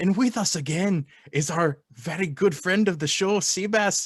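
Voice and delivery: bad Irish accent going Scottish. Co-host introducing a friend of the show on a Saint Patrick's Day podcast, accent drifting into Scottish. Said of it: "this is turning into a Scottish accent".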